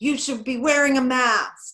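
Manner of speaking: very loud, high-pitched scolding yell. Retelling how an older neighbor yelled at them: imitating an old man yelling. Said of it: "he yelled at us".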